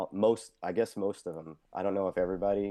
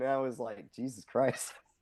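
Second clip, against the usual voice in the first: ordinary talk, nothing marked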